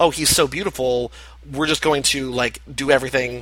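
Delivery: ordinary talk, nothing marked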